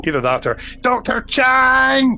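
heavy Glasgow accent, very high, slow and drawn out. After quoting a line about a Scotsman, the speaker exclaims in a strong Glaswegian accent. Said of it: "I really sounded very Glaswegian there".

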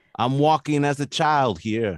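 put-on strong New York accent, high and loud. Discussing a film, checking how young Josh talked, in his New York accent. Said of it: "Is that his New York accent?".

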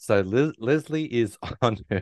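laughing and giggling through words. Trying to tell a funny story but laughing while talking. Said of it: "I can't stop laughing".

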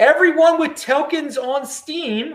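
Baltimore accent. Explaining a token snapshot to viewers, slipping into a Baltimore accent. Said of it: "I said that with a Baltimore accent".

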